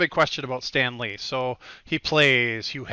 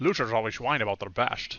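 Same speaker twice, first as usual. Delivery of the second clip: put-on Scottish film-star voice, quieter; 3 semitones lower, 7 dB quieter than usual. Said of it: "everybody should talk like Sean Connery always".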